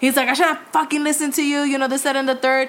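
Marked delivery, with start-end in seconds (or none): 0.3-1.6 furious, livid outburst with cursing. Retelling what a livid man said after throwing ground beef on the floor. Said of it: "He's livid".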